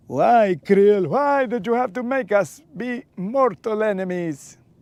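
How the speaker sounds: put-on vampire count voice, laid on thick. Addressing Krill in a Dracula voice. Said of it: "This Dracula voice is doing a number on my vocals".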